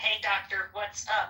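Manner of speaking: slow, drawn-out phone assistant AI voice. Retelling how the other made it talk: imitating a Siri voice. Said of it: "It was like a Siri".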